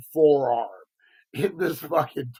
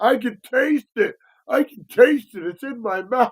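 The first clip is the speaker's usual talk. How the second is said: put-on panicking child voice, higher pitched; 7 semitones higher, 3 dB louder than usual. Retelling how a kid reacted in the car: imitating a kid freaking out. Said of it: "he's freaking the fuck out".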